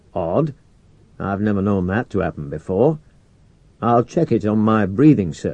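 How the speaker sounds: plain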